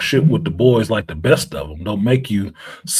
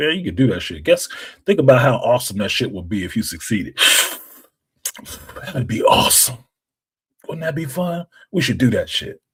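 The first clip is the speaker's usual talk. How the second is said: relaxed, confident, laid-back, easygoing tone; 3 semitones higher than usual. Acting out the inner voice kicking back smoking a cigar: laid-back inner voice. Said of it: "kicking back in the corner smoking a cigar".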